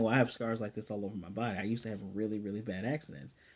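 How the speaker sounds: ordinary talk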